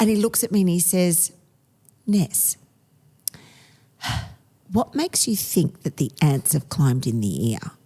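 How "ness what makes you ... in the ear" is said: mock-condescending, talking down as to a child. Retelling how he looked at her and answered her, mock-condescending as to a child. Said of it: "says to me really condescendingly like I'm five".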